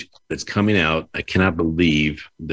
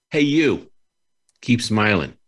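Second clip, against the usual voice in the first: put-on Bronx accent, combative edge, pitched up; 5 semitones higher than usual. Comparing how Chicago and the Bronx say a phrase, doing the combative Bronx accent. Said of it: "whereas in the Bronx, it's".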